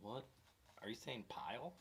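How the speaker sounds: baffled, confused, puzzled double-take tone. Retelling a first reaction to hearing a strange word: retelling a confused reaction. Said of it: "I had Rick's reaction".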